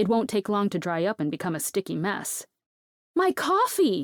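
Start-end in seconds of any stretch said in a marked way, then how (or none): 3.1-4.0 very high, shrill, raised shout. Reading a scene where the narrator's coffee spills: shouting. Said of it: "I shout".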